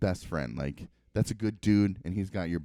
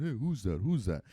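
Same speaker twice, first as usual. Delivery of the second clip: dog character voice; 3 semitones higher than usual. Retelling how the dog Tucker greets a car arriving: voicing the dog Tucker. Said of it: "And he's walking around my car checking it out".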